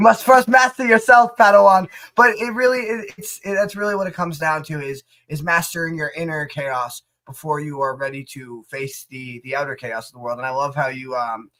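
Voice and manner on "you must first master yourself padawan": very loud, raised wise-master sensei voice. Joking about sounding wise after advice on inner chaos: mock sensei voice. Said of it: "like a sensei".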